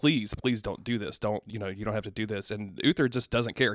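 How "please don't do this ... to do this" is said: put-on begging voice, quieter. Recapping a scene, acting out one character pleading with another: retelling someone begging. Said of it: "Arthur starts begging".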